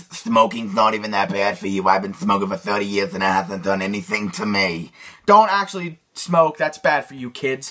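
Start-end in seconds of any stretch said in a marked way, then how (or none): 0.1-4.9 put-on low old smoker lady voice, light accent. Teaching how to do character voices, demonstrating the old smoker lady voice. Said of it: "Now for the old smoker lady voice".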